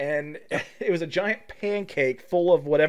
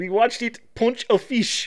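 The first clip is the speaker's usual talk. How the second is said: put-on Israeli accent, pitched up; 6 semitones higher than usual. Pausing a clip to imitate the man speaking in it, in an Israeli accent. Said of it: "this guy with an Israeli accent's like".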